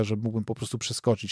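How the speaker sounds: ordinary delivery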